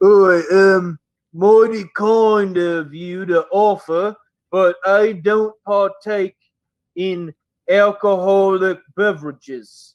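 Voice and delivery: unhurried, slow, drawn-out ogre character voice. Voicing the ogre declining a drink offer: voicing the blue-skinned ogre. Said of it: "he looks over at you and he goes".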